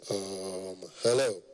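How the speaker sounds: deep, low rich man's voice. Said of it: "your voice must be deep".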